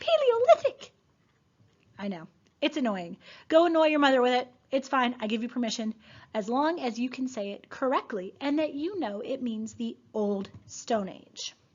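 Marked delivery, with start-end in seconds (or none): 0.0-0.9 very high, tiny, shrill, squeaky voice. Coaching listeners to practice pronouncing a word, in a little squeaky voice. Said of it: "Say it in a little squeaky voice".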